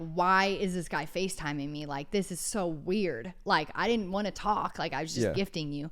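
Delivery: ordinary delivery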